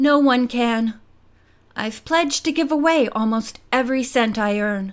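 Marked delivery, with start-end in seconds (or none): none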